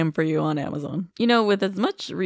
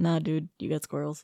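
put-on deadpan cop voice, quieter; 7 dB quieter than usual. Speaker recapping a story imitates a cop's reply, retelling a deadpan cop. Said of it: "this cop is like deadpan".

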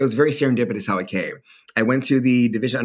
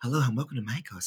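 hushed, very soft, very calmly spoken; 9 dB quieter than usual. Imitating a psychologist who talks like craft-store workers: imitating a very calm speaker. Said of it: "very calmly spoken".

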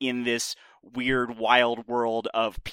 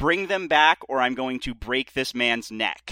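ordinary talk, nothing marked

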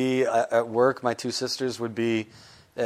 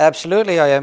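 fake Irish accent, higher and louder; 5 semitones higher, 9 dB louder than usual. Retelling going into an audition in character: put-on Irish accent. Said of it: "I audition like that all the time".

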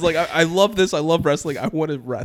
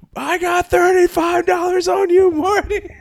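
put-on very high, drawn-out, drunken heckling yell; 14 semitones higher, 3 dB louder than usual. Retelling how a drunk fan at the match cheered: imitating a drunk fan shouting. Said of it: "So he's shouting".

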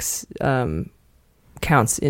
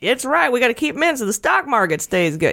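very high, put-on Southern Georgia accent; 9 semitones higher than usual. Speaker voices an imagined person from Georgia, in a put-on Georgia accent. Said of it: "rude of me to use that accent".

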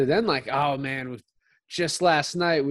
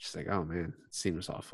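normal talking voice

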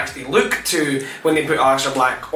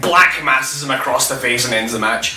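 plain

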